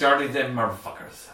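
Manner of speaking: low, put-on drunken Irish accent. Giving a co-host's goodbye at the end of the show: fake Irish accent. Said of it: "Was that Irish?".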